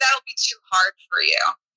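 ordinary delivery

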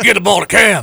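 put-on very high, very loud, shrill country South End accent. Acting out a helicopter dad shouting for his son: country South End accent. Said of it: "I gave you a country South End accent".

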